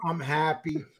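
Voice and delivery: put-on dragging, unhappy tone. Imitating another speaker saying they like being married: dragging voice. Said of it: "you go like this".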